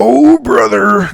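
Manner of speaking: rough, loud, belted-out delivery. Signing off a video, doing a Hulk Hogan impression. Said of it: "That's my Hulk Hogan impression".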